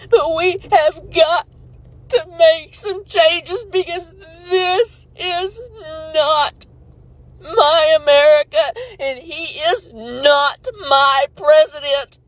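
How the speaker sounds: ugly crying, sobbing while speaking. Recording a video, apologizing for crying on it: ugly crying. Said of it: "I'm ugly crying on it".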